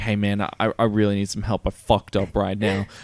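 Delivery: put-on, mock-trembling, shaky voice. Imagining a friend calling at night for help, imitating a shaky voice. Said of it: "their voice is shaky".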